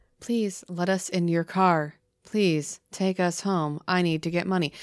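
unnatural, mechanical, put-on robotic speech. Imitating the children who ask to get in the car: imitating mechanical-sounding speech. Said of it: "It's very mechanical sounding".

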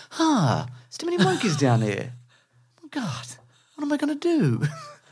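very high-pitched, swooping sing-song delivery. Retelling a film scene where the character lands: Mark Wahlberg impression. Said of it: "That's by Mark Wahlberg".

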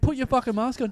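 furious, shrill, very high angry shouting. Retelling a woman without a mask going crazy at a runner: imitating someone yelling angrily. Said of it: "going crazy at me".

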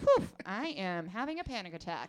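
put-on steady tone, dead level throughout. Retelling a partner announcing a panic attack while driving: imitating Will's unchanging tone. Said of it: "his tone stays this".

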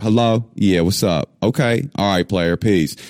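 easy, casual American Southern drawl. Retelling answering friends' phone calls as a teenager: imitating own teenage Southern accent. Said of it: "I had a Southern accent, an American Southern accent".

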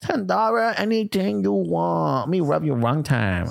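imitated Vietnamese accent. Retelling a movie scene, voicing the woman's reply to the man, in a vietnamese accent. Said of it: "I'm allowed to do that accent".

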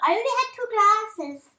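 tiny, very high, silly, funny little voice. Retelling what Mum used to say after drinking wine, in a funny little voice. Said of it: "do like a funny little voice".

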